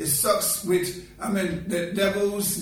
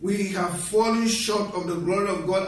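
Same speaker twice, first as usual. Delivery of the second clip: normal talking voice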